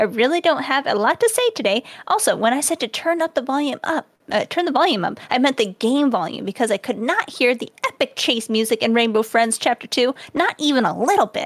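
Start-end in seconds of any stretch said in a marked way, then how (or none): none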